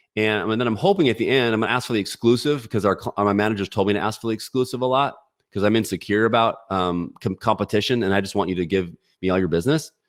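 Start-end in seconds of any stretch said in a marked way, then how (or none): none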